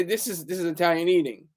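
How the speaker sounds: plain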